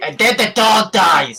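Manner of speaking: character voice, very high-pitched and loud, shouted. Walking past a puppet show, mocking its puppeteer: Breck's voice. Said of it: "in an excellent recreation of Breck's voice".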